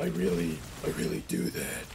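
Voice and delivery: devilish devil voice.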